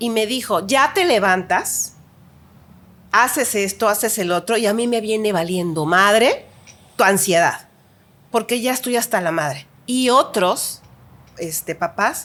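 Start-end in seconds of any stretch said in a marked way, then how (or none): none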